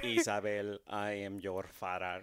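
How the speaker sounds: low, flat, droning robotic voice. Taking a turn at a Mexican Darth Vader, in a robotic Darth Vader impression. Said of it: "That sounds more like a robot".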